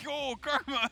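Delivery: high-pitched mock yell.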